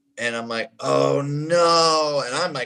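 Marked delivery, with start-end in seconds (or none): 0.8-2.2 play-acted, crestfallen, heartbroken, dismayed, drawn-out. Retelling own reaction to bad news on a call: retelling own heartbroken reaction. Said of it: "brokenhearted instantly".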